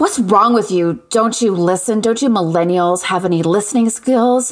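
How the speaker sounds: put-on breathless voice. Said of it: "this sort of breathless, middle-aged woman on the other end of the line goes".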